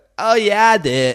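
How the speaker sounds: put-on very high, loud, hyped dude-bro YouTuber voice. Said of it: "How does he talk? He's like".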